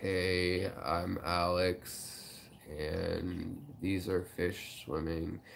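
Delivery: soft, low, gravelly zombie drone starting low. Showing how they talk when tired, in a zombie voice. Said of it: "it's like a zombie voice or something".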